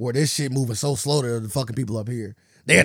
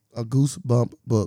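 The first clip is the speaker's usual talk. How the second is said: put-on voice assistant voice. Repeating a phrase to another speaker: Siri voice. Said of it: "I just did a sir".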